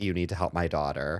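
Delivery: normal talking voice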